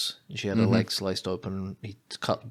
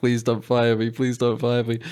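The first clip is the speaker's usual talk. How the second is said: mock crying, pleading tone, higher and louder; 3 semitones higher, 7 dB louder than usual. Retelling a waitress begging her boss on the phone: imitating someone crying. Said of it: "she starts crying".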